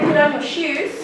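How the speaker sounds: ordinary talk, nothing marked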